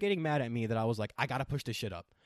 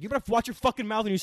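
enraged, out-of-control furious scream; 10 semitones higher, 6 dB louder than usual. Retelling an argument in the car: imitating his own screaming. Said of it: "I was screaming at her".

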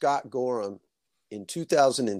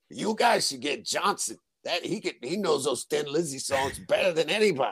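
put-on thick East Coast accent, casual tossed-off delivery; 3 semitones higher than usual. Retelling what Tommy Hendrickson said in the hallway: East Coast accent. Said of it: "in that East Coast accent".

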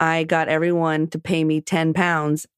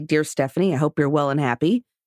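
ordinary talk

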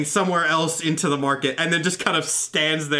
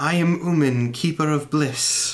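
very calm, serene, even, measured and deliberate delivery. Game character introducing itself after being asked for identification, in a very calm, measured voice. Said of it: "In the same kind of very calm, measured voice as".

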